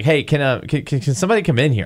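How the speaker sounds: put-on uneasy, startled, halting stammer. Retelling how a startled person called others in: imitating a startled, uneasy call. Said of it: "you knew from the tone of her voice that something was wrong".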